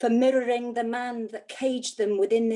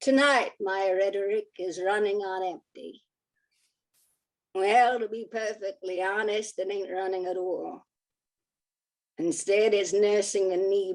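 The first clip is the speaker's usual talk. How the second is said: attempted American accent, held throughout; 3 semitones lower than usual. Performing a piece called Penetrative Discourse, in an American accent. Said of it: "I'm now going to have the audacity to do an American accent".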